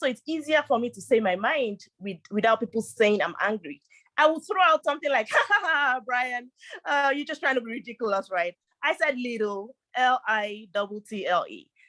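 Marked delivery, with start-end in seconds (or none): 5.3-8.5 speaking through laughter. Showing how to answer a ridiculous comment: saying it with laughter. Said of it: "I'll say it with laughter".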